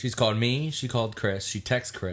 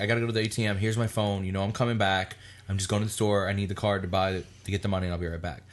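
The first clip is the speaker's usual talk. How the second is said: ordinary talk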